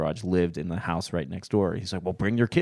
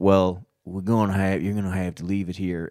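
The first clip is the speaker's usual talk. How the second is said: put-on thick, strong Southern accent, spoken slower; 3 dB louder than usual. Retelling what a man told the speaker's family, thick southern accent. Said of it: "He's like thick Southern accent".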